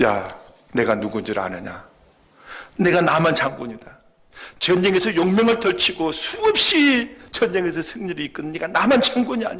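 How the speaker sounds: loud, high furious rant.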